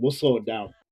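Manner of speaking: acted trash-talk tone. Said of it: "talking shit to him the whole time".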